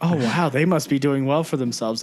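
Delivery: ordinary delivery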